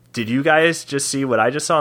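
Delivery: ordinary delivery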